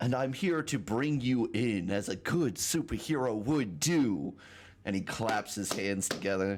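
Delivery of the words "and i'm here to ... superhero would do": slightly mocking tone, raised pitch. Voicing a hero who arrests a player character: almost mocking tone. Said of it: "in almost a mocking tone".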